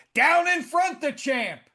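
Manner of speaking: put-on, very high-pitched, heckling shout. Recalling shouting at a heavyweight champion sitting in front, retelling a shout. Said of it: "and I shouted".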